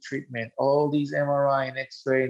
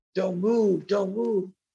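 put-on urgent, insistent screaming call, pitched up; 6 semitones higher than usual. Retelling a paramedic running up and screaming: imitating a paramedic screaming. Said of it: "running to me and screaming".

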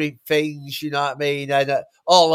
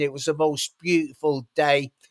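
usual speaking voice

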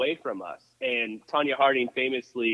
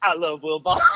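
put-on drunk man voice, higher; 4 semitones higher, 3 dB louder than usual. Retelling what a drunk man leaned over and said: imitating a drunk man. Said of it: "he's so drunk, so drunk".

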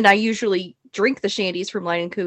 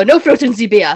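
loud, raised voice in a put-on Austrian accent; 6 dB louder than usual. Retelling an Austrian man's words at a bar: imitating an Austrian accent. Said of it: "That's a lovely accent you have there".

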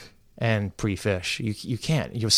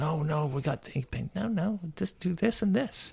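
put-on stressed, uptight, hushed, high fretting; 7 semitones higher, 6 dB quieter than usual. Retelling calling ben when stressed: imitating own stressed phone call. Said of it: "I do get a little uptight".

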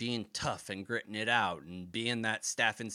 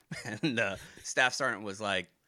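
ordinary talk

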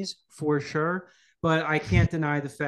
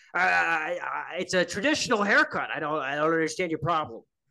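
deliberately terrible put-on voice, opening stammered; 2 semitones higher than usual. Joking about going on a talk show: terrible Alex Jones impression. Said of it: "Terrible Alex Jones impression".

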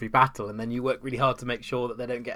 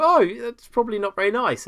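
imitated kind, friendly voice, higher and louder; 11 semitones higher, 7 dB louder than usual. Imitating a companion reacting to cruelty in a BioWare game: imitating a nice companion. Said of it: "a nice person with you will go".

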